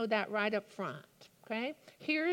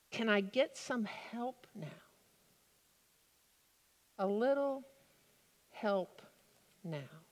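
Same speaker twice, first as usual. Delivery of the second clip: put-on small boy voice. A preacher quoting a character's line during a sermon, in a little boy's voice. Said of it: "I heard it in a little boy's voice".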